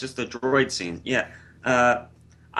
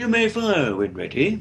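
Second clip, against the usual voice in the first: British villain voice, much higher; 7 semitones higher than usual. A film fan quotes a villain they love: Grand Moff Tarkin impression. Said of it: "British bad guy".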